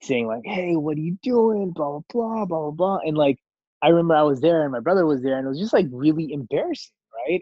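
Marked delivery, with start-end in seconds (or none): 0.4-3.0 hollering very loudly. Retelling how a bowling hall manager yelled at the speaker's dad, retelling a super loud yell. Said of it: "just started like yelling like super loudly at him".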